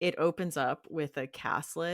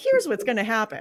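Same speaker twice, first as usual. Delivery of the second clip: put-on happy instructional video voice; 7 semitones higher, 11 dB louder than usual. Imitating an instructional video from the movie Battle Royale: happy instructional video voice. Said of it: "the tone of this instructional video makes me crack up".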